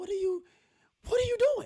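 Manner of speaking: voice shooting up very high. A speaker retells snapping at someone who wouldn't listen, retelling a raised voice. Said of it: "like my voice went up".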